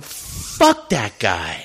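put-on mutter under breath. Retelling what they said to another actor after a man walked away, under their breath. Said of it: "under my breath i go".

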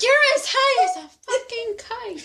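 put-on very high voice, vaguely British accent. Guessing a movie from a quote, the speaker delivers it in a slightly British accent. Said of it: "That's kind of British".

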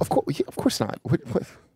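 hushed, very soft whisper. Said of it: "What are you whispering?".

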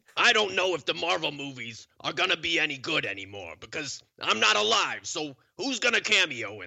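put-on high-pitched heavy New York accent. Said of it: "Really get that New York in there".

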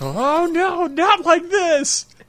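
mock hammy scream, very high and drawn out. Acting out a character being bitten by a shark: imitating over-the-top screaming. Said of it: "he's screaming like Quint in, in Jaws".

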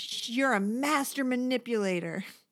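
mock heated tone, yell only sketched. Retelling a reality-show fight where one woman keeps yelling: imitating someone yelling. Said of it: "this is where she keeps yelling".

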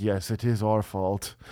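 grave, slow, solemn tone. Retelling what a festival worker said about blame, imitating someone solemn. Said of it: "really solemn".

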